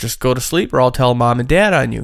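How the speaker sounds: normal talking voice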